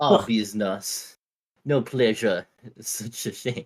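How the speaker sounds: clumsy put-on French accent. Voicing a character bound for the Tower of Fate, in a bad French accent. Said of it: "bad at doing this accent".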